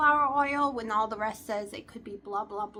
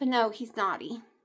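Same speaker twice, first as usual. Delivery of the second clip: usual speaking voice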